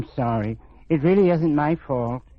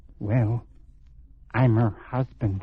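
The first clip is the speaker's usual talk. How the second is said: hushed, confiding half-whisper; 5 semitones lower, 3 dB quieter than usual. Answering a stranger's question, a man replies in a half-whisper. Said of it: "Why are you whispering?".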